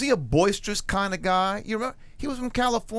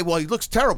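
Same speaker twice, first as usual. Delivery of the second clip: normal talking voice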